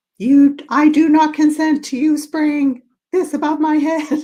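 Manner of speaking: very high, shrill, upset shouting. Speaker recalls yelling inside their house, retelling own past yelling. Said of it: "I was in my house yelling and going".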